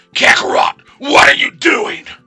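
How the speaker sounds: strained anime-style rival voice. Speaker asks listeners to rate the attempt; Vegeta impression. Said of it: "Is that a good enough Vegeta impression".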